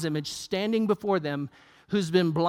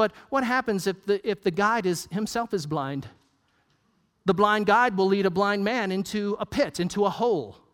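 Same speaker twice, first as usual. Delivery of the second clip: ordinary talk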